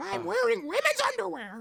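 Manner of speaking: very high, loud, swooping cartoon voice. Doing a favorite line while retelling the scene, Pinocchio voice. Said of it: "So there's my Pinocchio impression".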